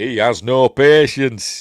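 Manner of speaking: put-on booming, very loud, slow, drawn-out Yorkshire accent. Retelling a film scene, the speaker quotes the Jedi Master in a Yorkshire accent. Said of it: "That's how he says it".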